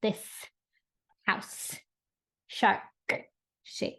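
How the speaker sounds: very slow drawn-out whisper, held, popped consonants. Demonstrating how to pronounce a practice phrase, very slow with popped consonants. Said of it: "talking very slowly".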